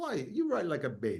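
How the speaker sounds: put-on European accent. Quoting what he would say when the speaker was growing up, put-on European accent. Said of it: "so he had this accent".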